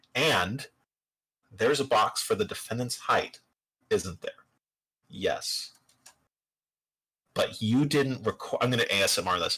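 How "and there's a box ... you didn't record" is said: slow, sinking voice dropped low. Demonstrating how the question to the witness gets asked, in a slow, low voice. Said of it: "my voice drops real low".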